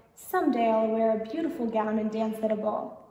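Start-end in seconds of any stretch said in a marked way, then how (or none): none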